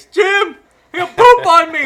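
very high, loud, slow, mock panicked shriek. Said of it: "I'm gonna call Jim up in the middle of the night".

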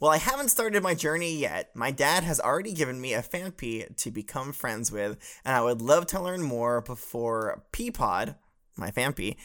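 ordinary talk

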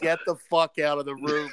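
plain

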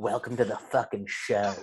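soft, hushed whisper. Retelling a movie scene where a character whispers a line: whispering like Will Ferrell. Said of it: "And then whispers to him".

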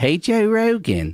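put-on Baltimore accent. Imitating a Baltimore fan greeting Joe Rogan: imitating a Baltimore accent. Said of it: "it's a weird accent".

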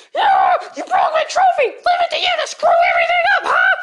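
furious, angry, high-pitched shout. Scolding a clumsy friend for breaking the trophy: yelling angrily. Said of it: "Don't yell".

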